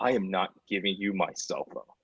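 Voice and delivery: put-on furious tone. Retelling a kid's reply when asked for his phone: imitating someone really mad. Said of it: "really mad".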